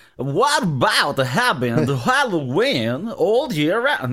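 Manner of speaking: slow, deliberate, drawn-out delivery, each word weighed. Asking about costume parties, doing a Christopher Walken impression. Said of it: "I'm gonna do, like, a Christopher Walken".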